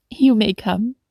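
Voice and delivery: ordinary talk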